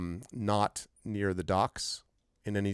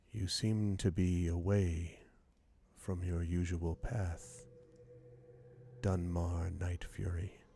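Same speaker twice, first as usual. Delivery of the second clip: quiet, hushed, murmured voice; 2 semitones lower, 7 dB quieter than usual. A voice speaks to the character as he turns onto the street, quiet voice. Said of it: "a quiet voice".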